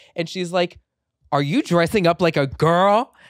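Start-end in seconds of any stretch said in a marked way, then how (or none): 1.3-3.1 furious, very loud, shrill angry scream. Retelling the mother's reply on the phone call, imitating her angry screaming. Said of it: "this angry Egyptian woman screaming at me".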